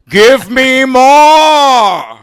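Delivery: shrill, drawn-out villain shout. Showing how the actor who plays the main villain talks: Brian Thompson impression. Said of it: "He talks like this".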